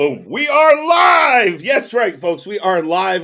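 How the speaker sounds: very loud, high, stretched, booming yell. Opening a live show to the folks on a Friday night, yelling. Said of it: "I don't know why I'm yelling".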